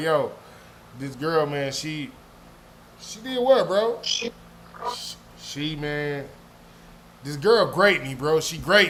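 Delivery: laughing through the words. Quoting a man's complaint about a girl, laughing while talking. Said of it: "I can't even say it with a straight face".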